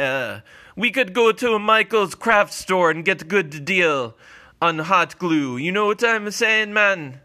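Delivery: put-on Jamaican-sounding accent. A character suggests getting hot glue at a Michaels craft store instead, Jamaican-sounding accent. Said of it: "Why do you sound Jamaican?".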